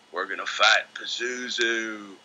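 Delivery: put-on slow, thick West Virginia drawl. Retelling a friend's plan to play D and D: imitating Dave Brown's West Virginia drawl. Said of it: "he spoke with a thick drawl from Brown County".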